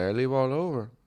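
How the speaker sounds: imitated Mexican accent. Speaker quoting a man who asked where they were from, Mexican accent. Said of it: "This guy had the quintessential Mexican accent".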